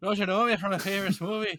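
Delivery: put-on Irish accent. Asked to give his Irish accent for the fans: Seamus O'Grady Irish accent. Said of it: "give us your Irish accent for the fans".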